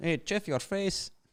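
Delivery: put-on Spanish-speaker accent.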